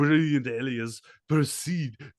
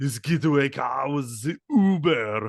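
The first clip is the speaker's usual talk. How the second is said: put-on Austrian-accented voice, pitched higher; 2 semitones higher, 4 dB louder than usual. Tell about a man's plan to steal power tools, in an Arnold Schwarzenegger voice. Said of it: "Arnold's kind of the perfect voice for Uber because that's basically Austrian".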